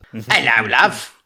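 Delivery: put-on Cockney accent, East London sound. Suggesting a cockney accent to someone about to try a southern drawl: cockney accent. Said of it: "Do like a Cockney accent".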